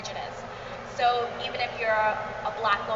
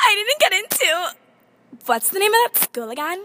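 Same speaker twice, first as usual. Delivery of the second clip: very high, loud speech through sobs; 9 semitones higher, 4 dB louder than usual. Heather answers a phone call, crying. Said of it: "Why are you crying?".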